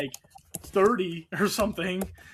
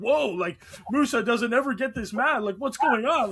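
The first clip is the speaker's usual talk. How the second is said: genuinely worried broadcaster voice, pitched up; 6 semitones higher than usual. Retelling a broadcaster's call of a fight: imitating a worried broadcaster. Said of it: "I could hear the worry in his voice".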